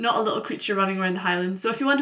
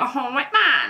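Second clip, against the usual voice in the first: put-on nasal voice, right through the nose; 4 semitones higher, 4 dB louder than usual. Describing a stereotype of how she'd sound, the speaker mocks it in a nasal put-on voice. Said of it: "I'd be talking through my nose like".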